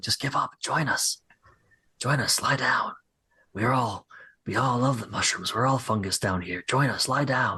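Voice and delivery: whispering voices. Narrating voices that call to the players as they pass through, whispering voices. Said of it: "You hear whispering as you go through".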